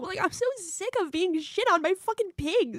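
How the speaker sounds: high, slow, tearful speech, crying through words. Saying she is sick of being shit on: crying while talking. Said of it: "now she's crying?".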